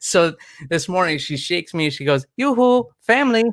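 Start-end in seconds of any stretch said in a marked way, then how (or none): 2.4-3.4 very high-pitched, playful, teasing tone. A father acts out his daughter waking him with a Disney bit-character impression. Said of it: "she just starts laughing in my face".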